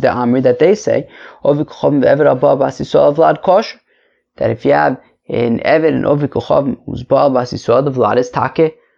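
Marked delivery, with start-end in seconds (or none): none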